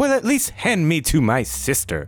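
high, swooping talking-sword voice. Voicing a rapier that speaks in a player's head: talking rapier voice. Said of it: "you hear a voice in your head say".

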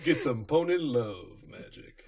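slow, romantic soul-ballad lover's voice.

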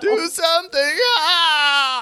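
put-on old man desperate scream. Voicing an old man screaming at a player for help: old man screaming for help. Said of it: "You hear the old man screaming at you for, for help".

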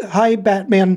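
high, cracking voice. Recalling greeting Kevin Conroy, retelling own voice cracking. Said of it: "like just voice cracking".

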